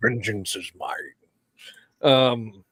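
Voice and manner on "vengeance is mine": put-on low, quiet murmur in a Scottish accent. During a story discussion, a co-host chimes in: Sean Connery voice. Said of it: "Why do you keep doing the Sean Connery voice?".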